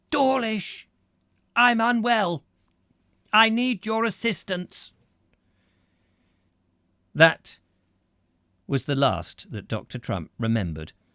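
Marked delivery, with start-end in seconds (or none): 0.1-4.9 very high, reedy, thin, forced and strained voice. A narrator reads a proud man forced to ask Dawlish for help: thin, strained voice. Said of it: "in a thin, strained voice".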